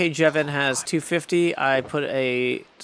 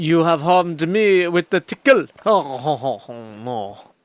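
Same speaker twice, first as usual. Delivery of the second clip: fake, clumsy, loud French accent; 2 semitones higher, 5 dB louder than usual. On a stream, the player voices a line in a bad French accent. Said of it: "that was a bad French accent".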